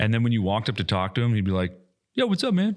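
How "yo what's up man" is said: put-on super-friendly easygoing buddy voice, very high. Imagining a feared warlord greeting a visitor: imitating Will as super friendly. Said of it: "nicest guy in the world".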